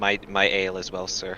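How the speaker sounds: timid. A player's character raises a hand to ask the server, shy. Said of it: "I'll raise my hand just shyly".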